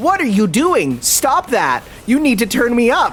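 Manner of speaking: high, indignant, annoyed narrator voice. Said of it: "the narrator goes".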